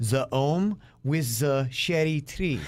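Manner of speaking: French-accented English, read aloud. Speaker reading a practice sentence, praised by the listener; French accent. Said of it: "I'm very impressed with the way you do your French accent".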